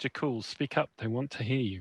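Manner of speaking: soft, muttered under the breath. Role-play character sidles up behind a companion to urge him, muttering very quietly. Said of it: "mutter very quietly".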